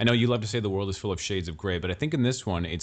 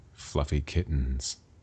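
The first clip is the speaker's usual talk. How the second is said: ominous, scary, menacing tone, much lower pitch; 6 semitones lower than usual. Showing that any word said in that tone sounds scary, in an ominous tone. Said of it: "you could say any word in that tone".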